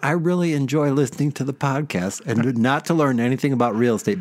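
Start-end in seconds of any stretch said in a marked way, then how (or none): none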